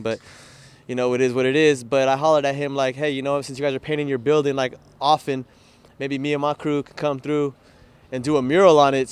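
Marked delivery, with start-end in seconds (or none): none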